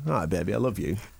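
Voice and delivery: very low, sleazy, seductive voice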